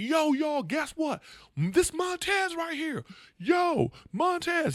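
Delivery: very high, stretched-out, drawn-out yell. Retelling a fan at a casino gig late at night: imitating a fan yelling. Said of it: "He's yelling like".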